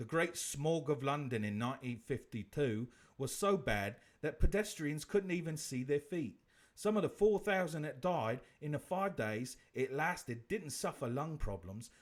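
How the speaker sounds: put-on British accent, reading-aloud style. Reading a fact aloud, British accent. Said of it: "I'm going to read this one in a British accent".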